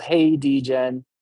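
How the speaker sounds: plain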